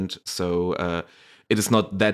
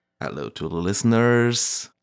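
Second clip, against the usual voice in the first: on-air radio broadcaster announcer voice; 2 semitones higher than usual. Asked by the host to greet the listeners, the guest answers in a radio voice. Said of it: "That was a very good like radio voice".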